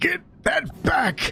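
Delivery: high, slow, strained desperate cry.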